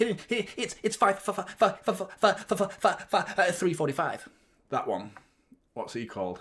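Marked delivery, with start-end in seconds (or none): 0.0-4.3 put-on stuttering cartoon pig voice, much quieter. Listing cartoon voices and doing that pig's: stuttering cartoon pig voice. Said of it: "that pig that goes".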